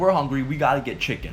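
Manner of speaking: usual speaking voice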